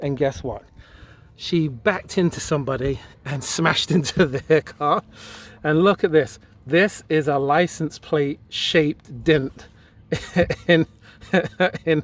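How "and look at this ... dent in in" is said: trying not to crack up, stifled laugh. Speaker showing viewers a dent from a reversing accident, holding back a laugh. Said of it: "I'm trying not to laugh".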